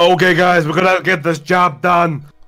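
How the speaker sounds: big, loud, booming commanding voice. Speaker telling fellow players how they imagined Fox would sound, booming voice. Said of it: "Fox to have like a booming voice".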